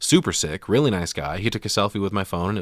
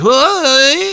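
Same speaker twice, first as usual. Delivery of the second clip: goofy put-on comic voice, higher and louder; 12 dB louder than usual. Retelling a film scene, imitating a goofy character: goofy Jerry Lewis voice. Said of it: "doing a Jerry Lewis impression".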